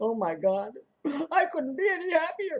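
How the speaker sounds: fake crying, high, about-to-cry voice. Joking about being too happy to show it: mock crying while claiming happiness. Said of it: "it sounds like you're gonna cry".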